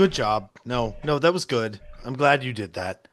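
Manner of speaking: put-on disappointed tone. Retelling what he said after the other guy was killed, imitating a disappointed voice. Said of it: "clear disappointment in his voice".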